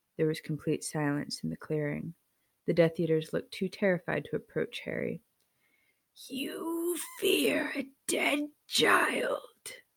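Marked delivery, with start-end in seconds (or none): 6.3-9.7 very high, slow, drawn-out, swooping snapped delivery. Narrator reads Voldemort's line to the Death Eaters, Voldemort snapping.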